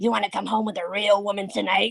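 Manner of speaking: in-character creepy, playful tone. Retelling a line said to a guest while in character: creepy funny in-character line. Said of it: "in total character".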